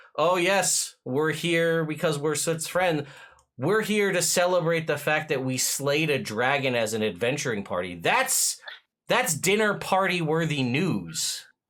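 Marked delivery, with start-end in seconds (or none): none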